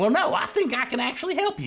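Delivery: very high, eerie, creepy creature voice. Voicing a living book that blocks a player's path: voicing a creepy living book. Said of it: "He goes and he stands in front".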